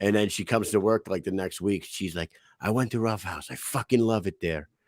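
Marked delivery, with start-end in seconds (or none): 2.6-4.6 put-on heavy, hard Russian accent. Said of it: "she's got a hard accent".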